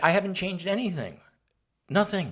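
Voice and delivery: snide, sarcastic, condescending brush-off tone. Asked what he has changed in 40 years, the speaker retells his sarcastic, condescending answer. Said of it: "in my sarcastic, condescending way".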